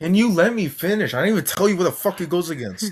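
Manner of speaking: irritated. Interrupted while making a point, asking to finish: angry. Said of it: "Why are you angry, dude?".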